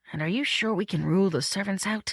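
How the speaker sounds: ordinary delivery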